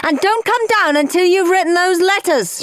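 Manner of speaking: high-pitched shouting. Mum backing up Dad after Henry shrieks that he hates his parents, shouting. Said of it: "shouted Mum".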